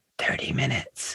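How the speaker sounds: barely-there, hushed whispered delivery. Speaker retells a companion's reply to asking how much longer, retelling a whisper. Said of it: "she like whispers".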